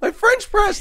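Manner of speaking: very high, loud, fake blubbering, wailing sob. Acting out someone sobbing over a broken French press: mock crying. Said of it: "why are you crying so much?".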